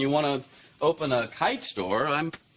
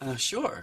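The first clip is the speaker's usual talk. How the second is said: lacking enthusiasm, quieter; 2 semitones lower, 5 dB quieter than usual. Answering whether you're okay with her going to college: unenthusiastic. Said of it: "You don't sound very enthusiastic".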